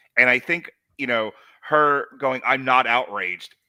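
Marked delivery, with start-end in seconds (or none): 2.5-3.5 mock tone loaded with detest, disgust, disappointment, flat. Retelling a character's reaction to another speaker, imitating disgusted disappointment. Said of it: "she says it with such detest and disgust and disappointment".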